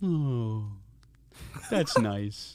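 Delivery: talking-animal turtle voice. Voicing a smiling turtle who greets a player: Eddie the turtle voice. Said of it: "you see Eddie the turtle just kind of, like, smile at you".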